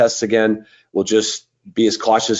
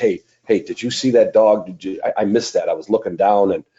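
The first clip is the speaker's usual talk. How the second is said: acted whispering. Acting out a judge talking to another judge: imitating a whisper. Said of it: "you whisper to the other judge".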